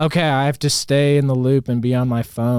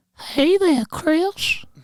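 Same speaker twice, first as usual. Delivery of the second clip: put-on creepy old man voice, higher pitch. Doing impersonations when asked to give any: Herbert impression. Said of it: "I can do funny ass impersonations".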